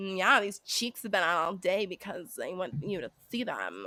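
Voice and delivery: put-on valley girl voice, swooping and sing-song. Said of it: "putting on that valley girl voice".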